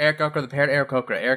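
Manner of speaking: rapid-fire, sped up. Asked to say it one more time, the speaker repeats the phrase three times faster. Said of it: "3 times faster".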